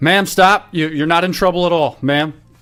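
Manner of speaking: loud shout. Speaker recounts chasing a running woman downhill toward the river, retelling a shout. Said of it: "I shout like".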